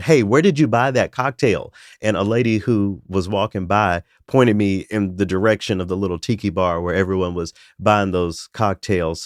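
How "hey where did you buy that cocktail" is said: play-acted voice, slightly raised and higher. Recounting finally calling out to a man who kept ignoring them, voice raised a little. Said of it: "I finally raised my voice a little bit".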